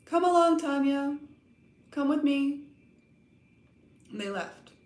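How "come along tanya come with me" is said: calm, even, unruffled, slightly raised and high. A girl walks off, then calls back to her companion in a calm, quiet voice. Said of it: "in a calm, quiet voice with no sign of her former irritation".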